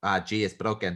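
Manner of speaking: put-on Spanish accent. Speaker retells the doctor at his crash site after he broke his collarbone, in a spanish accent. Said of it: "That's my Spanish accent".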